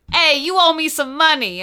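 poor put-on Boston accent. Retelling what a character first said, in a terrible boston accent. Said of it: "We both just did the worst Boston accent".

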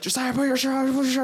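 acted, rapid, rushed screaming, pitched very high. Retelling how everyone in the house shouted at him, retelling people screaming. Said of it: "just screaming at me like".

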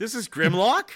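questioning upward rise in pitch on "Grimlock". Asked if sure, repeating the name with rising pitch on grimlock. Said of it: "Did you hear the question mark in my voice?".

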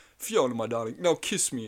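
hurried, pushy, impatient delivery, pitched high. Retelling a funny wedding moment from the film: imitating Lord Farquaad. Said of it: "He just goes".

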